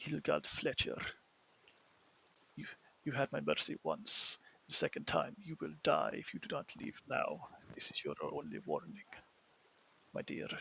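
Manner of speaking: hushed, very soft whisper. The narrator voices a figure speaking into the archer's ear, in a very soft voice. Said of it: "you'll hear the very soft voice".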